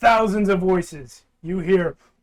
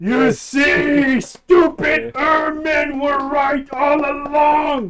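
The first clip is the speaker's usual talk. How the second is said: shouting character voice, higher pitch; 6 semitones higher than usual. Voicing a character turning back to address everyone: character yelling to everyone. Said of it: "turns back and yells to everyone".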